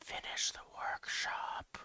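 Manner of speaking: soft hushed whisper, very close to the ear. Narrating a game scene where Nash whispers into a player's ear: Nash whispering. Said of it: "whispers in your ear".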